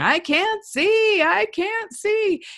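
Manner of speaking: acted little boy's whine, very high, very slow. Retelling a little boy in story time who couldn't see: imitating a child yelling. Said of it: "was just yelling".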